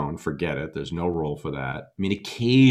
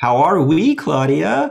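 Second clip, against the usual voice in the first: put-on very loud, very high, slow, drawn-out sing-song baby talk; 11 semitones higher, 9 dB louder than usual. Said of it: "It's this sort of up-talking, slow".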